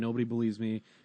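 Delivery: mock crying, acting upset. Retelling a scene where a girl sent to her room says this, imitating crying. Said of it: "she's crying and saying".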